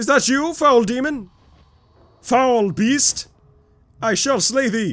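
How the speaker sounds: very high, booming, mic-busting shout. Calling out to the Walrider while playing: loud, blowing out the microphone. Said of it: "blowing out my microphone with the plosives".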